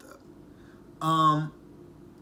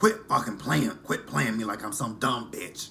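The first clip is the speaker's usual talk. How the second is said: harsh, angry smoker's voice. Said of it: "I hate doing Angela's voice".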